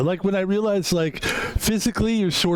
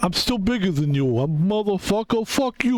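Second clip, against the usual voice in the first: put-on Italian-accented voice; 3 semitones higher than usual. Imitating a father boasting he is still bigger: imitating dad with Italian accent. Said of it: "I'm doing an Italian thing".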